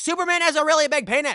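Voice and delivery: very loud, very high, shrill yelling. Retelling what a man kept shouting at them, imitating a yell. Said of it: "But he's like yelling it".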